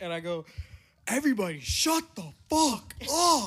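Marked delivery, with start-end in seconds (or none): 1.1-3.5 loud, pitched-up shouting. Retelling losing it when everything got loud, retelling a yell. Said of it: "I start yelling".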